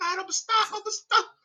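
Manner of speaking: very high-pitched, weepy, acted sobbing through words. Retelling stopping on the treadmill after a brother's call: imitating own past crying. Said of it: "how he made me cry on the treadmill".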